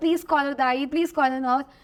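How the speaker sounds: ordinary talk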